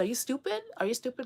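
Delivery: a little bit of put-on Italian accent. Imitating what she always says: imitating an Italian accent. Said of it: "with an Italian, she's a little bit of Italian accent".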